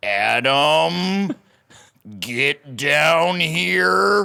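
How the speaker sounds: very slow, drawn-out, put-on angry dad voice. Retelling a father calling him downstairs in a fake "I'm mad" voice. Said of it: "he'd put on a fake voice".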